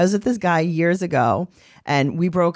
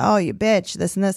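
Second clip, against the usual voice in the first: acted-out screaming, higher; 2 semitones higher than usual. Retelling a scary encounter, quoting a man calling them names, retelling a scream. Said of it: "he's screaming about".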